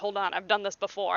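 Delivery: ordinary delivery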